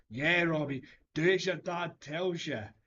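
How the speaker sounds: mocking, loud, high heckling shout. Retelling what he shouted from the crowd at a man told to calm down, retelling his own shout.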